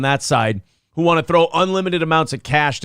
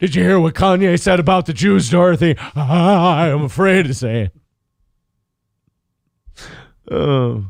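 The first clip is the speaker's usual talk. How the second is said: timid cartoon lion voice, lower; 3 dB louder than usual. Doing a bit about a woke lion talking to Dorothy, in a Cowardly Lion voice. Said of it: "If I could do a Cowardly Lion impression".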